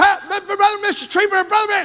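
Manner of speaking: play-acted, high, screaming call. Recalling a day in 1963 when someone ran over, retelling a scream. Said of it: "and he was screaming".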